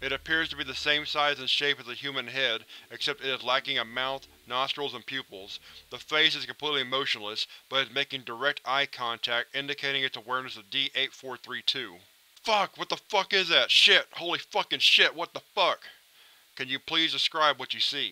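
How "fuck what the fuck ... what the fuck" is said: loud, panicked shouting yell. D-8432 sees a motionless face making eye contact with him, yelling.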